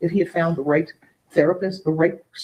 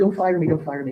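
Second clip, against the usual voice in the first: put-on begging tone. Retelling what a crying driver said after rear-ending her car: imitating someone begging. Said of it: "And he is begging".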